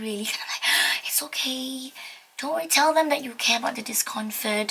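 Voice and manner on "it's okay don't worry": very soft, gentle, soothing, comforting shush. Showing a traveling parent how to calm their child, in a very soft shushing voice. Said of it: "using a very soft voice, a sushing voice".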